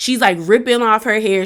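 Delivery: ordinary delivery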